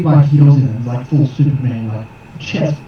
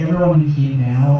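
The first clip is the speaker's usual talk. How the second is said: usual speaking voice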